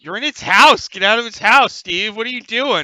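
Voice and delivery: words breaking up with laughter. Narrating a game, the guard above calls down to Steve, imitating a guard laughing while talking. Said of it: "the guard up above, starts cracking up".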